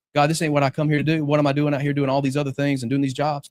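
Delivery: ordinary delivery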